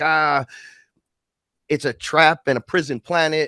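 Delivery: high, drawn-out scream. Retelling screaming up to the sky in the backyard: imitating own screaming. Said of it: "I'm screaming up to the sky".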